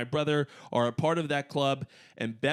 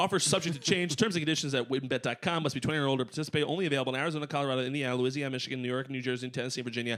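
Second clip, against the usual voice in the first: fast, rattled-off, rapid-fire reading. Reading the ad's legal disclaimer aloud: talking very fast. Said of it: "I actually talked that fast".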